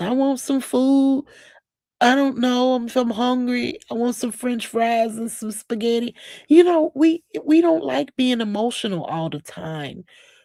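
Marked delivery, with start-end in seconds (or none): 0.0-6.1 put-on crying voice, higher pitched. Imitating someone crying about wanting food: imitating Krishan crying. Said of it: "crying like Krishan was".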